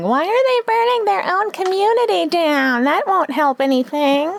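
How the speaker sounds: put-on very high little old lady voice. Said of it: "my um old lady impression".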